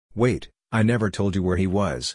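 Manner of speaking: ordinary delivery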